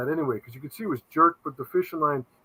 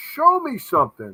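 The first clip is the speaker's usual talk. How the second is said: exasperated, frustrated yell, pitched high; 5 semitones higher, 4 dB louder than usual. Retelling watching a show that cuts off: imitating own screaming at tv. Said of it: "I'm screaming at the T V going".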